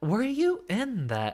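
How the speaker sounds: very high voice, breaking upward mid-line. Asking the usual match opponent whether they were in the tourney, voice cracking. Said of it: "voice crack".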